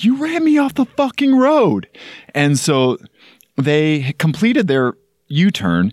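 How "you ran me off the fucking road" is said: play-acted, very high-pitched, furious yell. Retelling being run off the road, the speaker reenacts yelling at the driver. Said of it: "And I just yelled, like".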